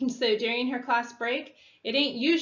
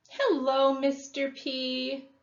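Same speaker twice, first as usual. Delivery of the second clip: put-on sugary sweet baby voice, drawn-out p sound; 2 semitones higher than usual. Reading a woman greeting a man who just came out, sweet baby voice. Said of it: "Char says in a sweet baby voice".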